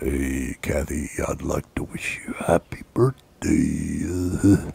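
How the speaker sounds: exaggerated, put-on very deep bass voice, soft. Acting out his Cameo birthday message to Kathy, imitating a man's very deep voice. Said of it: "because you know how deep it is. He's like".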